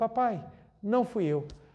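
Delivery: calm, soft-spoken, slow and gentle. Retelling calmly answering a father's angry question: retelling a gentle reply. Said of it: "virei suavemente e falei assim".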